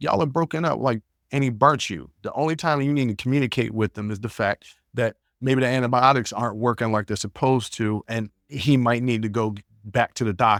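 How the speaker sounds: usual speaking voice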